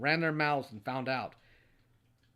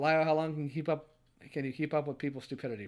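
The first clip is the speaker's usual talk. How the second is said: ordinary delivery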